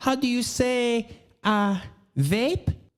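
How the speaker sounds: high-pitched, put-on, fake Spanish accent. Telling how everyone bought her accent, imitate Hilaria Baldwin's Spanish accent. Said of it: "Everyone bought her Spanish accent".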